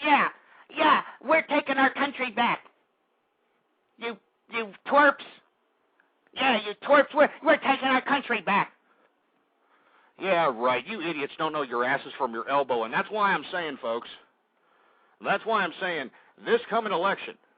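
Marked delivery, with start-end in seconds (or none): 0.0-8.7 squeaky, high-pitched small voice. Mocking a radio host who says they're taking the country back: Mark Levin squeaky voice. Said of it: "with a little squeaky-ass fruity voice saying".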